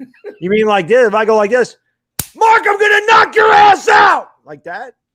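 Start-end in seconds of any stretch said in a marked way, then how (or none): 2.3-4.3 loud, very high, shouted. Asked by the host to punch a hand and yell a threat at him: yelled threat. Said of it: "I need you to punch your hand and yell".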